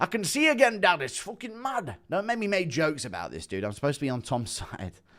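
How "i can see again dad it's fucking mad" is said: excited voice pitched very high. Speaker announces an impression of Tom and Andy together: impression of Tom. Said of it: "Impression of Tom and Andy".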